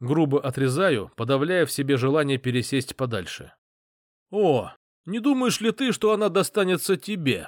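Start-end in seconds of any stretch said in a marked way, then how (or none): 4.3-7.5 high, taunting, scornful mocking tone. He answers the narrator's curt warning with a mocking question. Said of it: "Насмешливо спрашивает он".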